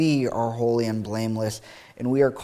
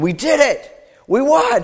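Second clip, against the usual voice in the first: very high, very loud screaming; 8 dB louder than usual. Recalling watching the U.S. women's water polo team win, retelling screaming. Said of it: "and just screaming".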